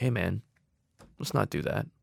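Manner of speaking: very calm, even-keeled, soft delivery. Recounting answering an ad on set, retelling it very calmly. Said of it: "I said it very calmly".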